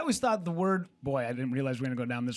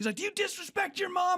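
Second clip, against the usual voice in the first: mock screaming drill sergeant, much higher. Retelling a show where a sergeant screams at a nine-year-old: retelling a sergeant screaming. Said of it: "he's screaming at him".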